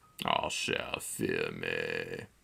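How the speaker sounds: very low, deep, soft, sultry, sexy voice. Recording a video, the speaker switches into a deep, sexy voice. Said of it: "and my voice is deep and sexy".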